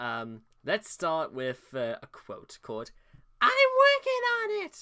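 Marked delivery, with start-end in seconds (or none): 3.4-4.8 shrill, very loud caricature voice, pitched way up. Reading a quote aloud: Chris Chan voice. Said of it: "that was my Chris Chan voice".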